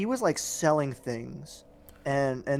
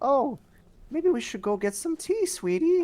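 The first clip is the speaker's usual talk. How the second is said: very high, badly faked old-woman voice; 12 semitones higher than usual. Retelling what a nice lady said offering tea: bad old woman imitation. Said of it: "really bad imitation of, like, an old woman".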